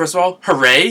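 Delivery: loud hooray. Opening a video about a new War at Sea set, loud hooray. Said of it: "Sorry about the loudness of the hooray".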